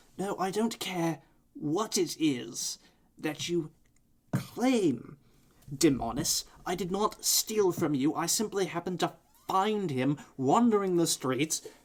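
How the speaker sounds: defensive, petty, indignant, squabbling bickering. Two vampires come down the ladder, one arguing with Demonis: bickering. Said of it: "the you can faintly hear the sound of bickering coming from the ladder. Mm. And eventually, the Toreador and Malkavian find their way down. / the Toreador and Malkavian find their way down. / the you".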